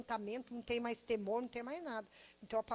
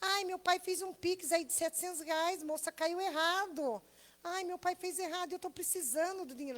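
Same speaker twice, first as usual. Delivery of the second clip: put-on tearful, high, sobbing small child's voice; 6 semitones higher than usual. Retelling a scam audio from a girl asking for money, imitating a crying girl.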